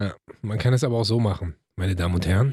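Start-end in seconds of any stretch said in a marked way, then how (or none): 1.8-2.5 seductive tone, lower pitch. Welcoming listeners to the show, mock sexy voice. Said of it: "hörst du die Sexiness in meiner Stimme".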